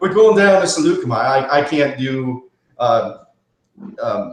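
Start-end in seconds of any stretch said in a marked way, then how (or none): 0.0-1.2 put-on British accent, higher and louder. Imitating Obi-Wan saying the planet's name: Obi-Wan accent. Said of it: "I love Obi-Wan's accent".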